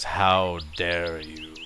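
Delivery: deep, evil, rumbling voice of an ancient god. Voicing an unnamed deity speaking through a statue: deep evil rumbling voice. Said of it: "deep, evil rumblings of".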